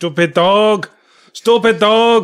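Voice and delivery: high, slow, loud, shouted fake Japanese accent. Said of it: "being said in a very racist accent".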